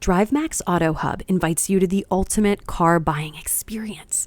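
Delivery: confiding, secretive stage half-whisper. Speaker demonstrates a second read of an ad line, half-whispering like a secret. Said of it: "like you're whispering to a friend, like it's a secret".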